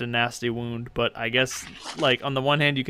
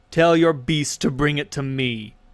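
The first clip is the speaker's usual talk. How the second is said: loud, raised voice calling out to be heard; 3 semitones higher, 6 dB louder than usual. Voicing a soldier stepping closer and demanding: crying out. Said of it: "he cries out".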